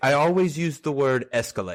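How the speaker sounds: put-on thick, heavy, laid-on Indian accent. Quoting a banker father you visited, in a heavy Indian accent. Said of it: "he's heavy Indian accent".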